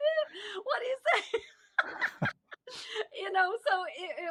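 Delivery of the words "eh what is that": high laughing yelp of disbelief. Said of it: "I was like".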